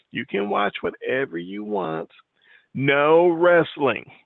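mock very sweet, high, slow, syrupy voice. Retelling how she turns to you at night, imitating her very sweet voice. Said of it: "in a very sweet voice of hers".

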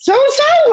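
very high-pitched, startled, freaked-out disbelief. Retelling answering a phone call from an old manager: retelling freaking out. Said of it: "freaked out".

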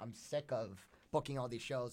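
ordinary talk

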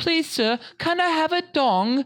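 put-on very high, pleading voice of a tiny child. Acting out a friend as Oliver from Oliver Twist: Oliver Twist voice. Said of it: "literally like Oliver from Oliver Twist".

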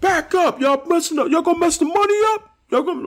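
very high, shrill, loud New York shout. Speaker demonstrates how to get mad at a group, in a loud New York Debo voice. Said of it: "You need that Debo loud New York voice".

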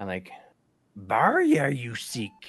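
put-on old creature voice. Showing how he said a name, the speaker does a Yoda voice. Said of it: "the Yoda voice".

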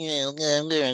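nerdy, mock cartoon alien voice.

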